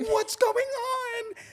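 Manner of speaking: put-on very high tearful sobbing, on drawn out. Retelling rushed packing, the speaker imitates Jenna crying on the floor. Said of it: "she's on the floor crying".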